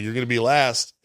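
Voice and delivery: ordinary delivery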